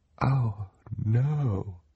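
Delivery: small, scared, hushed little voice. Looking at a birdcage in the tower window, a character speaks in a small, scared voice. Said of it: "Klaus said in a small, scared voice".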